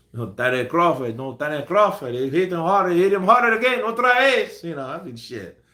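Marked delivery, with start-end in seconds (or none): 0.1-4.6 put-on Spanish accent, pitched up, commentary-style. Answering a chat request to commentate a fight: put-on Spanish accent. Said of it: "do a Spanish accent the whole time when you commentate".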